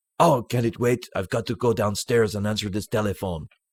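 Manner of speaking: put-on Belgian-accented voice. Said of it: "That's actually a very good Jean-Claude Van Damme impression".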